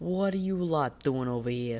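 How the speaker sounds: put-on old-time Chicago gangster accent. Retelling what people said to them, in a 1920s Chicago mobster accent. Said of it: "nineteen twenties Chicago Italian mobster accent".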